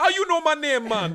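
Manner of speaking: put-on Jamaican accent, high and loud. Retelling a scene where Hairball answers Wolverine, in Hairball's Jamaican accent. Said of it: "Jamaican accent".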